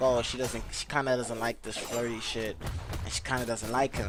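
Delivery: ordinary talk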